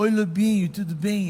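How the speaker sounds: slow, solemn, reverent manner of speech. Retelling how Jefferson greeted him: imitating Jefferson's churchgoer way of talking. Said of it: "Até o jeito de falar do Jefferson era, é jeito de crente".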